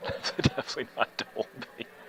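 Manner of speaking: laughing through words. Commentating a game, repeating the co-commentator's joke, laughing while talking. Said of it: "Sorry, not supposed to laugh".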